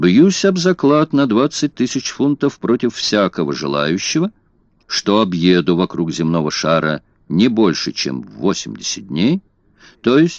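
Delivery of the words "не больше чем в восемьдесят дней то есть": ordinary delivery, nothing marked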